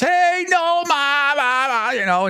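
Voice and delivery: put-on girl scream. Storyteller retelling a girl calling to nomar across a club, imitating a girl screaming. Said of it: "Some girl screams across".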